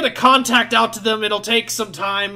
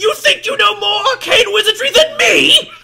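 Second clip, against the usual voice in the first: very high, shrill, loud shriek; 13 semitones higher, 5 dB louder than usual. Voicing an offended wizard NPC answering a player: shrieking. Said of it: "you hear him shriek".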